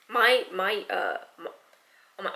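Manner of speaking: hard stuttering. Speaking directly to Shivam and tripping over the words, stuttering hard. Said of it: "I'm I'm stuttering so hard".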